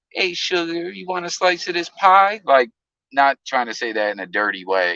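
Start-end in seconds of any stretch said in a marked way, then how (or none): 0.2-2.4 put-on sweet, pitched-up, country-accented girl's voice. Describing how sweet Rain is, in Rain's soft country accent. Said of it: "soft spoken and got that country accent".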